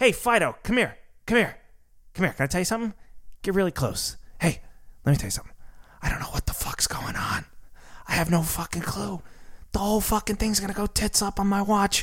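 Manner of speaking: mock drunken whisper. Imagining Powell drunk at home, talking to his dog: Powell whispering impression. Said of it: "whispers to his dog".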